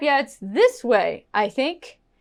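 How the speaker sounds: questioning rise in pitch on think. Teaching how intonation shows uncertainty, rising pitch on think. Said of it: "If my intonation goes up".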